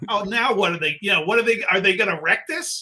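loud, anxious, fretful, panicky rush. Speaker retells his worry on hearing who would play him in the film: retelling own panicky words. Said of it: "Now I'm starting to get a little panicky".

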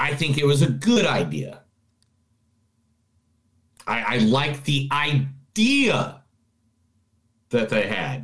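easy, slow, measured, methodical step-by-step delivery. Finally getting a turn to share thoughts on a movie, slower, methodical tone. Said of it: "in a slower, more methodic, easier tone".

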